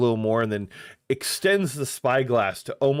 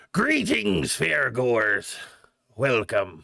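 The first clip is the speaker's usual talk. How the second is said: put-on elderly goblin voice, calling out. A game narrator voices a figure behind a ticket counter greeting fairgoers: calling out. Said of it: "He lowers the spyglass and calls out".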